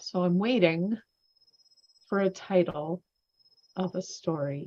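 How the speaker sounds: very slow, drawn-out, halting, stop-start speech. Host stalling while waiting for a story title, speaking very slowly. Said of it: "I'm speaking very slowly".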